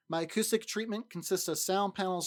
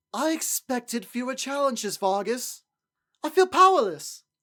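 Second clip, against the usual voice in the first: higher, louder, snivelly, aristocratic upper-crust voice; 7 semitones higher, 8 dB louder than usual. Voice actor in a last run-through, speaking to Vargas; snivelly aristocrat voice. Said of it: "sn- snivelly, rich aristocrat".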